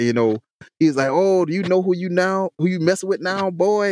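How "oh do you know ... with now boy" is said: put-on angry outburst, higher pitch. Retelling how a stopped man reacted to being detained: imitating someone going ballistic. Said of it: "he went ballistic".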